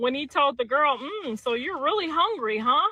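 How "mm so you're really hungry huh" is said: proper, professional work voice without any swagger. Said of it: "he be using that professional voice".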